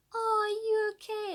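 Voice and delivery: very high, very slow, patronising, condescending voice. Imitating patronising people asking after someone, in a high-pitched voice. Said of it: "Like saying it in a high pitched voice".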